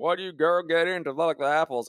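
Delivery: put-on real thick Southern US accent, high. Voicing a farmer talking to the animal, in a thick southern accent. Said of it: "with like this real thick southern accent going".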